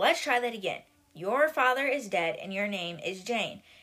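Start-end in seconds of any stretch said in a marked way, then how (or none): none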